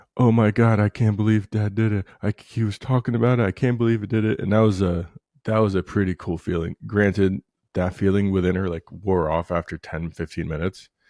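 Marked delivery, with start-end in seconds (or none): 0.2-4.4 words choked out through hysterical sobbing. Retelling a daughter's reaction in the hallway, imitating hysterical crying. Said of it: "my daughter hysterically crying in the hallway".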